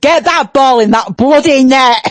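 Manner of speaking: Yorkshire-accented speech. Asked what they would say to the England team, in a Yorkshire accent. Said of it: "what would you say to the team in your Yorkshire accent?".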